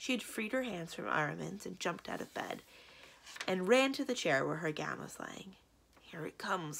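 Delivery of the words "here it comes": soft, hushed whisper under the breath. The ogre speaks as the woman runs to her gown, whispered. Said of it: "whispered the ogre".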